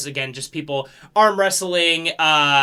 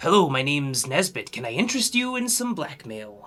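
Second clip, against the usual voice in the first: put-on older man's voice; 4 dB quieter than usual. Voicing an older man with an eye patch selling blackmail: voicing an older man with an eye patch. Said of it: "older man with an eye patch, um, and he goes".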